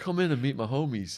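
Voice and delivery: acted-out eager, worked-up, buzzing excitement. Retelling how a man reacted on first hearing him speak: imitating someone excited. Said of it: "he's buzzing".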